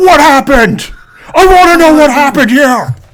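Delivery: mock pressing, threatening tone. Acting out a knife standoff in a friend's house: acting menacing. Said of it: "menacing each other, going like".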